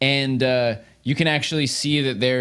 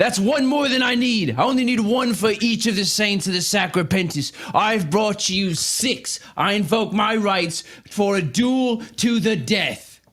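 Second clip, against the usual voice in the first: yelling character voice, higher; 7 semitones higher than usual. Voicing a recruit leader who kicks the door open: Tyvor yelling. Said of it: "Tyvor yells".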